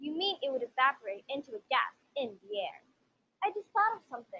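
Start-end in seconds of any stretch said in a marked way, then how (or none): 3.4-4.4 anxious, worried, sudden, quick and pitched higher. Suddenly struck by a thought during a talk about evaporation, sounding worried. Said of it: "you sounded worried".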